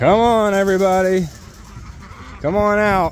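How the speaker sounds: coaxing, enticing delivery.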